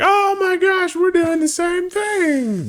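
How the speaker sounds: high, slow, mocking put-on gasp.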